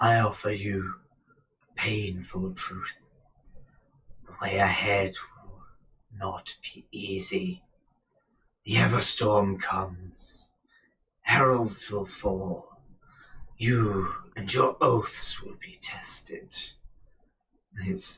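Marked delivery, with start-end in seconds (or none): 0.0-16.5 grating rasp on every word. Narrating a rippling figure speaking to Axie, raspy voice. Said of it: "he rasps out".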